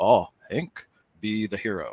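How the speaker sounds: very slow broken English, put-on German accent. Retelling how a German man offered him the last one, imitating German broken English. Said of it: "I'm mimicking his uh, how he speaks in his broken English".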